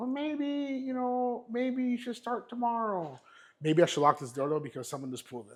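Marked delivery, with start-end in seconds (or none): 0.0-3.2 high, slow, hesitant, meek timid voice. Showing what the weak inner voice sounds like: imitating a weak, hesitant inner voice. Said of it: "a bitch voice that's like".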